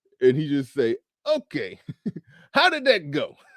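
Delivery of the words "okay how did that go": high, swooping put-on voice, swinging wide. Imagining a follow-up interview question: Chris Rock impression. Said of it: "That's my Chris Rock impression".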